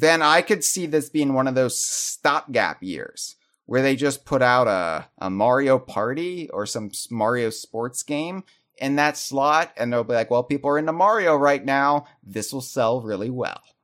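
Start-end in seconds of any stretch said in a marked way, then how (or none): 10.3-13.6 put-on smug, self-satisfied, complacently confident voice. Imitating Nintendo's reasoning about a Mario game: imitating a smug Nintendo. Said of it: "That sounded so smug".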